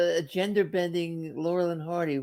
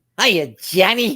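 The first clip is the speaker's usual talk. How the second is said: put-on louder 1940s old-timey gangster voice; 9 dB louder than usual. Showing how to greet Johnny, in a 1940s gangster voice. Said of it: "as if I were a 1940s gangster".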